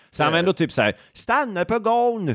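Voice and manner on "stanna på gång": Småland dialect, pitched very high. Retelling what a woman's father told her, in a Småland dialect. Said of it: "det var småländska".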